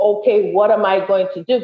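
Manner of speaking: normal talking voice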